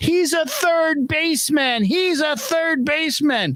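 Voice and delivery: woman screaming, voice very high. Retelling a sixth-grade baseball game, speaker acts out a woman screaming at him. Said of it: "She starts screaming at me".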